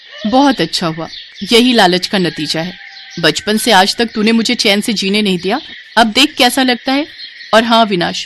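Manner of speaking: ordinary delivery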